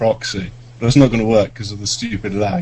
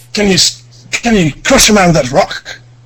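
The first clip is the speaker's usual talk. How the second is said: put-on Scottish accent, much higher pitch; 9 semitones higher, 6 dB louder than usual. Told by another player to say it with the accent, the speaker tries a scottish accent. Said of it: "With the Scottish accent".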